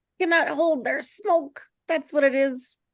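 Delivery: strange voice. Reading a screenplay scene, high characters laughing: really weird voice. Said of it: "He talks to in a really weird voice".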